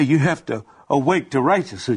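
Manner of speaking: ordinary delivery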